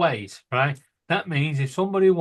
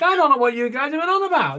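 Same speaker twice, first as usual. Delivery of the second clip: very high-pitched voice; 11 semitones higher, 4 dB louder than usual. Imagining how Paul would react after his 3D printer worked first time: imitating Paul. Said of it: "And he'd be like".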